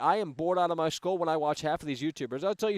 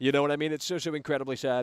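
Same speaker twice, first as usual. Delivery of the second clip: plain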